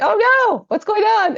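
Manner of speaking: high, loud cry full of panic.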